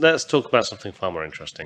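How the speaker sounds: fast, sarcastic tossed-off delivery.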